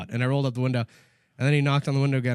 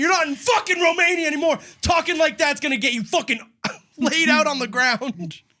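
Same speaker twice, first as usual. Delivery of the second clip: mock very high, shrill scream; 3 dB louder than usual. Retelling what was screamed in a man's face: retelling a scream in someone's face. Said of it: "I screamed in his face".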